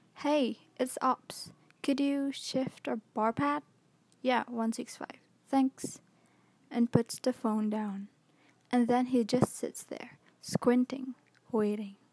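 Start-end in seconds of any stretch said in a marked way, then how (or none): 0.2-6.0 mock groggy, half-awake, still-asleep voice. Retelling a half-awake officer phoning the bridge: imitating a still-asleep voice. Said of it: ""I'm still totally asleep" voice".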